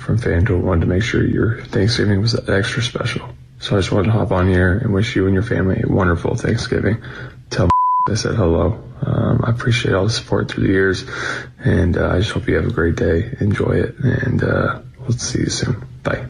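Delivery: seductive, sexy, very low voice. Recording a thanksgiving greeting for supporters, the speaker uses a sexy voice. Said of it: "why is he using his sexy voice?".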